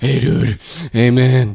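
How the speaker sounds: slow, drawn-out, heavy-breathing laid-back dude voice. Imitating a friend at a party in a heavy-breathing party guy voice. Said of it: "Oscar always in these situations has this really kind of".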